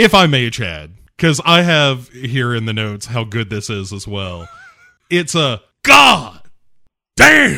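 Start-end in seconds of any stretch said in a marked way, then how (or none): 5.1-7.6 goddamn belted out high, slow and loud. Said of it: "I'm a connoisseur of a good goddamn".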